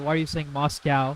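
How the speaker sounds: ordinary delivery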